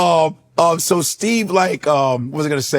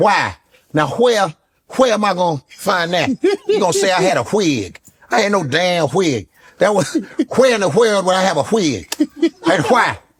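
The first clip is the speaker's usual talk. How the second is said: strongly stressed W sounds on why, where, wig. Proving the impression sounds like Steve, the speaker does Steve with his W's. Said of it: "Because he does with his W's".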